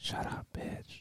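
quiet whispering. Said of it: "'cause we're whispering?".

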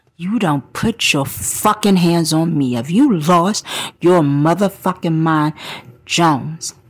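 acted, cold, controlled, very calm menace. Retelling how they forced a man to his knees, retelling a calm, menacing warning. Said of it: "very calmly but menacingly explained to him".

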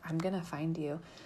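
whispered speech. Retelling what a man whispered at them from six feet away, whispering. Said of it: "He just whispered".

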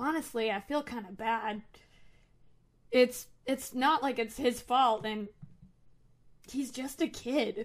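hushed, confiding voice. Narrating a man leaning over the counter toward the listener, lowered voice. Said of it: "he lowers his voice and leans over the counter a bit and goes".

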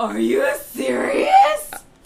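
loud, slow, excited and disbelieving shout. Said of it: "Oh, I'm excited".

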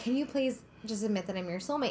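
plain

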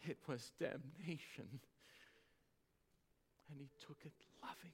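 low, intense voice caught between sob and laugh. A preacher retells a man's repeated words to listeners, retelling a low half sob, half laugh. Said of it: "in a low, intense voice and a half sob and a half laugh".

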